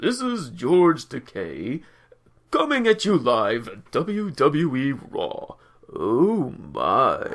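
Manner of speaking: deep, animated announcer voice with swooping pitch. Pretending to be the Raw General Manager live on the show, do a George Takei impression. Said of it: "an impression of".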